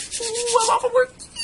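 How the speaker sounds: very high, loud, giddy excited squeal.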